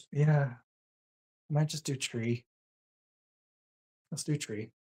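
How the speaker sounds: deflated, defeated, resigned tone. Deciding to pick tree after wanting something else, sounding defeated. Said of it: "You sound so defeated".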